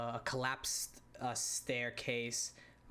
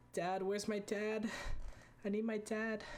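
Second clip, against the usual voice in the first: put-on very high sobbing, crying young boy voice; 10 semitones higher than usual. Narrating a curled-up boy calling for his dad: crying young boy. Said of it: "he's just crying, like saying".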